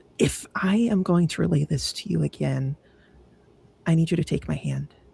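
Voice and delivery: hushed half whisper, only partly voiced. Voicing a character telling a companion about a vision: half whispering. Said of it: "half whispering now".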